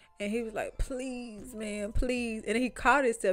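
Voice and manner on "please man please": mock imploring, outright pleading, begging tone. Retelling a phone call where he begged to hang out: imitating someone begging. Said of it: "I ain't begging or nothing".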